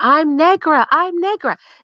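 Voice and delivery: put-on Southern accent, screaming. Retelling a scene from Alex Haley's Queen: Queen screaming in Southern accent. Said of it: "she started screaming".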